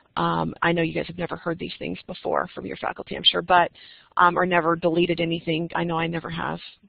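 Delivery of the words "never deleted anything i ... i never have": ordinary talk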